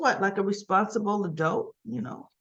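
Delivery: plain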